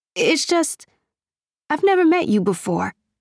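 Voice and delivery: high, halting, stammering, stumbling hesitation. A narrator reads the first-person speaker replying to him, stammering. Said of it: "I stammered".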